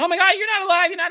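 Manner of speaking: put-on freak-out shouting. Recounting a man's reaction to another speaker, retelling a freak-out. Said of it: "He freaks out".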